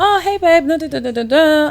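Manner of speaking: sweet, gentle tone.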